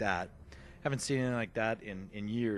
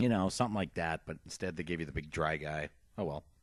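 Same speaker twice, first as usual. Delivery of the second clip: ordinary talk, nothing marked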